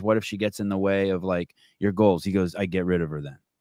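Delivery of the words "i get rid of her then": put-on icy-cold, offhand tone, lower pitch. Quoting a man's answer to the speaker's question, mimicking an icy-cold reply. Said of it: "Just like ice".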